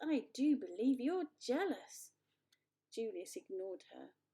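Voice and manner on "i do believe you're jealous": high, raised, milky cooing tone. Narrator reading a character's reply to another, cooing milky voice. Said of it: "cooed Jasmine in her milky voice".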